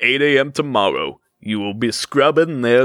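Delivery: plain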